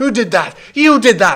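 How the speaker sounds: shrill, very high, very loud accusing yell. Narrating the crowd's reaction after the spell is cast, shouting accusingly. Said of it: "you hear shouts like".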